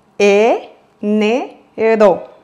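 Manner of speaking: enero drawn out very slowly, syllable by syllable.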